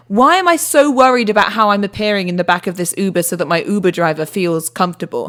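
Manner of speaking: ordinary talk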